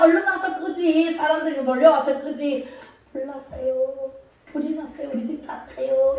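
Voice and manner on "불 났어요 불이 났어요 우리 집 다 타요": timid, feeble, soft, meek murmur. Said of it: "이러면 사람들이 와요?".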